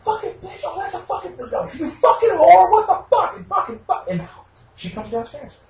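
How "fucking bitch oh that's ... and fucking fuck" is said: mock shrill, very high, loud screaming tirade. Retelling playing a video game and losing: imitating himself screaming. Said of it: "here's me screaming for".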